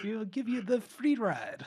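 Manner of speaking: bad German-Indian accent. Repeating a character's offer of a free ride in his stereotypical accent. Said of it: "I love his accent".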